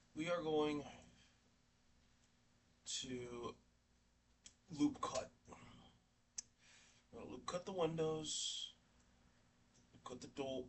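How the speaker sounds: tired, flat, low energy. Explaining a Blender modeling step after a sleepless night: low energy. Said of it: "Sorry if I'm low energy".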